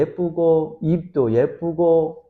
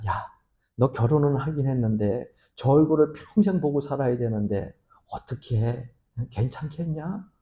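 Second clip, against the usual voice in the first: quieter, acted-out, sneaky, furtive whisper; 3 semitones lower, 6 dB quieter than usual. Telling a joke, acting out a friend whispering to the married friend, retelling a furtive whisper. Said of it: "귓속말로 슬금 얘기를 했답니다".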